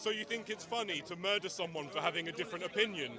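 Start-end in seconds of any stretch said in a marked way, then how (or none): none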